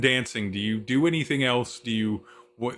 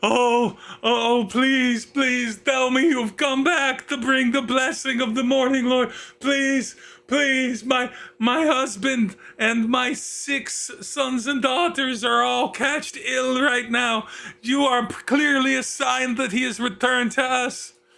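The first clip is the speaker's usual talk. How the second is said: very high crying wail; 13 semitones higher than usual. Game master voicing an older woman kneeling before a player character, wailing while crying. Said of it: "begins fully wail crying".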